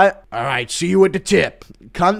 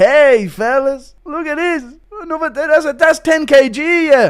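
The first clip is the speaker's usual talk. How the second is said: very high, loud, drawn-out bragging tone; 10 semitones higher, 5 dB louder than usual. Acting out a requested bit, bragging about a new dumbbell max: Connor McGregor impression. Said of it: "Impression of Connor hitting a new max".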